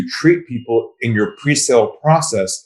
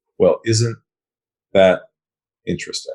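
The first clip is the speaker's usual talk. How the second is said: steady, unruffled calm in a low, lowered voice; 5 semitones lower than usual. Recounting a talk with a man at a big company, the speaker repeats their line: retelling a calm, lowered voice. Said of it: "lowered my voice, and I said to him".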